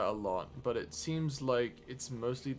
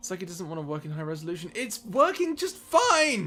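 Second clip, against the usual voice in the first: exasperated annoyance, higher and louder; 7 semitones higher, 8 dB louder than usual. Complaining that the stream looks bad to viewers: frustrated anger. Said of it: "I am so mad!".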